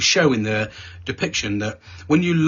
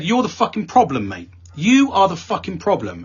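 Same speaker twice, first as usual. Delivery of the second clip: mock furious, heated, angry tone, swooping pitch; 7 semitones higher than usual. Speaker retells snapping at an older man in a team session; retelling an angry outburst. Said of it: "because I was really angry about this".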